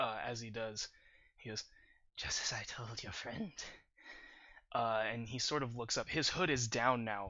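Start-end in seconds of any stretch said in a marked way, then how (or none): 2.1-3.5 chuckling and coughing, much quieter. Narrator voicing a wounded captive threatened with fire, chuckling and coughing. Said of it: "he kind of chuckles and coughs up some blood".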